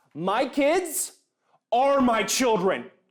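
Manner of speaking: intense, high passionate tone. Next in a row of joke impressions, a passionate goat owner impression. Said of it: "my impression of a very passionate goat owner".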